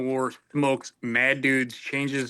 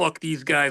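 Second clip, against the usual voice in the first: plain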